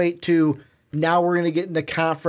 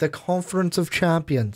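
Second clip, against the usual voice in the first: fake British accent on the name. Podcaster repeats a conference name, correcting the other host; put-on british accent. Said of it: "I don't know why I'm putting like a British accent on it".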